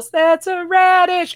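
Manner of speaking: sudden, high-pitched yell. Retelling a movie line from a fight at the end: imitating a yell. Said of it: "he just yells".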